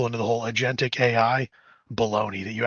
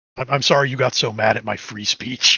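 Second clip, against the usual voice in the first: mock snarky, sarcastic tone, much louder; 5 dB louder than usual. Mocking a language model's apology, imitating a snarky non-apology. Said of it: "like a snarky non-apology".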